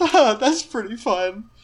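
talking while giggling. Voicing a character who giggles at a player's sparks: giggling while talking. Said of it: "he giggles at that".

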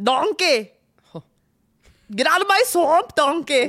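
put-on ogre voice with Scottish accent. Discussing the film with another speaker, quoting the ogre's famous line, Shrek impression. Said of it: "What is that accent? He's not fucking Irish".

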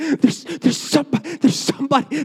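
terrified breathless panting. Retelling telling parents about an intruder: imitating terrified breathless speech. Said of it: "I can't talk 'cause I'm so terrified".

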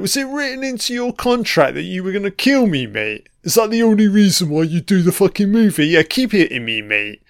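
animated voice with pitch swooping all over. Reacting to a movie scene, voicing Mike from the movie. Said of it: "Mike's like".

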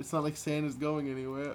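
plain

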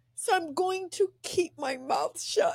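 tearful voice. Handing over to a guest after praising the book, crying. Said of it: "I don't know why I'm crying".

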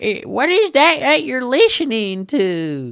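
put-on, very high, drawn-out country accent. Imagining a listener's grandma calling from the other room, country accent. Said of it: "that was a country accent".

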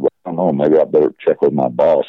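normal talking voice

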